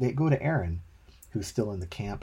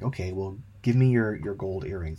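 ordinary delivery

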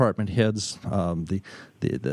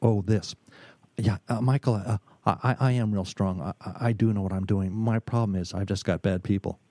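hushed, deadly earnest stage whisper; 2 semitones lower than usual. Retelling what a struggling executive confided: imitating a hushed, dead serious confession. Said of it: "just about in a whisper, dead serious".

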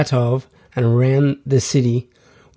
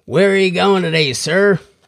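put-on polite American accent, pitched up; 6 semitones higher than usual. Retelling a scene, voicing a woman with an American accent. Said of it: "let's say she had an American accent".

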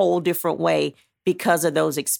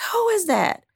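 mock yelling, very high-pitched and loud. Retelling the son calling out after the door was unlocked: imitating someone yelling. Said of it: "why are you yelling?".

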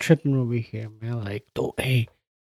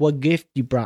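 imitated Haitian Creole accent. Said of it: "It's that Haitian Creole accent".

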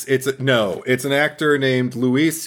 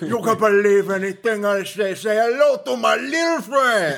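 high-pitched, tough-guy movie gangster delivery; 8 semitones higher than usual. Retelling a movie scene with a character doing: Al Pacino Scarface impression. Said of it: "he does his best Al Pacino in Scarface".

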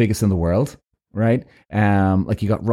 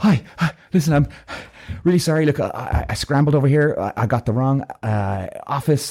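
put-on breathless voice, pitched much higher; 4 semitones higher than usual. Retelling meeting a receptionist, acting out being out of breath. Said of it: "I'm out of breath".

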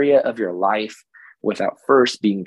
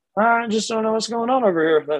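very high, goofy, silly made-up character voice; 12 semitones higher than usual. On a podcast, the speaker retries one of their made-up personality voices. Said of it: "That's one of my voices".

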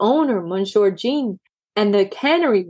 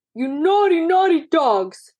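high, raised, hollered shout; 6 semitones higher than usual. A man grabs the poodles by their collars, shouting. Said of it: "shouted Monsieur Jean".

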